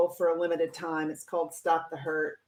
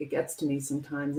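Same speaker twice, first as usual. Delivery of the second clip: plain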